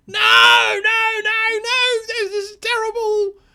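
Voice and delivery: drawn-out, very high, loud, horrified, panicked screaming. Voicing a burning goblin who sees a severed head: goblin screaming in horror. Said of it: "he just starts screaming".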